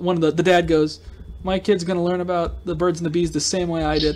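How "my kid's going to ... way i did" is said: ordinary talk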